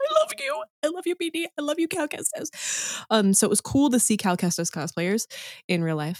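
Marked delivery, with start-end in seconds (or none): 0.0-3.0 put-on quiet excited gushing, higher. Retelling following a cosplayer at a convention: imitating silent excited gushing. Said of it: "losing my mind over this B D droid, but, like, very silently".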